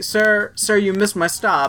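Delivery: put-on calm speech. Retelling a bus passenger speaking to the driver, imitating calm speech. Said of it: "she said it that calmly".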